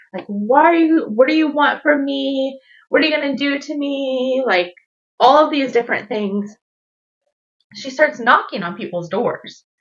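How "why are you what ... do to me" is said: mock, toned-down mild yell. Retelling what a woman running from a house yelled: imitating someone yelling. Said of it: "yelling in the call".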